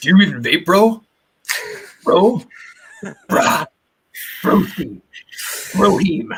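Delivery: bro-dude voice. Describing a typical vaper, the speaker acts him out: big bearded bro-dude vaper voice. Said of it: "my impression of the typical kind of vapor is this kind of big bearded dude".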